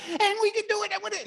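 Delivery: very high, very loud, fired-up coach voice. Showing how a big coach sounds when excited: high and fast excited voice. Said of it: "the voice goes high and fast".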